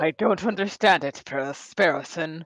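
sour, grouchy, grumpy put-on character voice. Voicing his character, speaking to Sparrowson: grumpy character voice.

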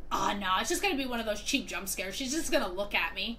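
normal talking voice

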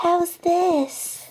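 high, ladylike voice, clearly put on. Trenton, told to talk like a lady for the mission, tries a lady voice. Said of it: "you have to talk like a lady".

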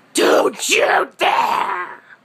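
put-on monstrous troll voice. Speaker quotes how their mother talks to them, in a horribly scary troll-like voice. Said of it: "in this horribly scary troll-like voice".

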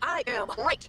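said like it's meant. Told to say it like they mean it, answering again: said like you mean it. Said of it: "I said like you mean it".

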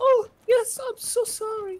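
sweet, very high, slow saintly voice. Imitating a friend who sounds like a little saint: imitating Maskey sounding like a little saint. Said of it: "He sounds like a little saint".

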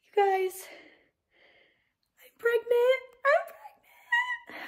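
very high, overwhelmed excitement, bursting with joy. Announcing a positive pregnancy test to her viewers; overwhelmed with excitement. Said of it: "I can't even talk right now".

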